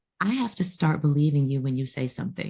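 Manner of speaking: ordinary talk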